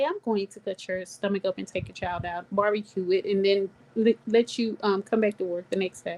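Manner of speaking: calm, level, unruffled tone that never shifts. Retelling what a supervisor said without changing tone: imitating a calm voice. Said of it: "talk to you in a calm voice and say".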